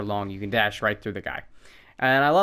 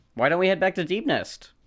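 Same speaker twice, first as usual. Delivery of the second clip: cheerful, bright, delighted, pitched up; 8 semitones higher than usual. The speaker, close to finishing, says where to go next, in a delightful tone. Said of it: "saying it in such a delightful tone".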